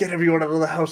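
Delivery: mild put-on calling out. Retelling how the dad, hosing a massive fire, yelled orders: imitating dad yelling. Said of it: "And he's yelling".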